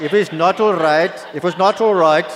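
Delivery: loud, high-pitched Indian accent.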